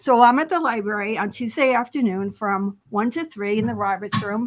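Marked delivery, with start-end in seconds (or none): 0.0-3.6 spoken fairly fast, rattled off quickly. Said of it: "you said it kind of fast".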